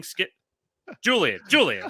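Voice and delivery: heated, animated sports-talk style, swinging pitch. Joking about debating on a show, doing a Shannon Sharpe impression. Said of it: "that's my Shannon Sharpe impression".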